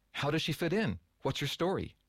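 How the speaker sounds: eager tone. Leaning forward, a listener presses the speaker for his story, eagerly. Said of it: "leaning forward eagerly".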